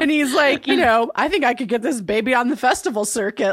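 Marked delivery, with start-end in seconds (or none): 1.2-3.5 mock, all worked up, excited and eager voice. Retelling what the boat guy said: imitating someone excited. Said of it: "he's all excited".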